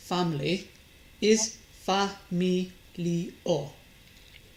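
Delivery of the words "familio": familio, weight put on the I. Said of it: "with the stress on the final I".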